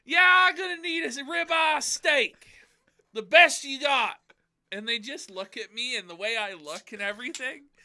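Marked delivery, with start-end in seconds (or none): 0.1-4.1 very high, very loud, shrill put-on voice, belted. Retelling ordering a steak at a Quebec store: Ralph voice. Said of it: "the way I sound doing the Ralph voice".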